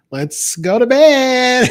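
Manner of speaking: coquettish mother voice.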